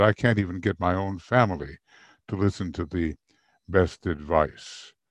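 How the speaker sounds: ordinary talk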